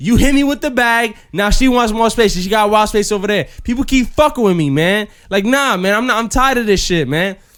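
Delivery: angry, aggrieved, worked-up man ranting. Retelling a man on the train complaining to another passenger: imitating a man ranting. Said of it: "She sees him wilding".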